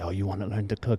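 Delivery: strong put-on French chef accent. Retelling what the chef asked about learning to cook: imitating a French accent. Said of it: "It's super French".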